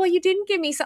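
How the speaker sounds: high-pitched, sassy tone.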